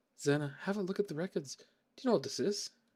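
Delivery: bad, rough, half-remembered put-on Irish accent. Trying out a game character's voice: bad Irish accent. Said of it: "really bad kinda Irish accent".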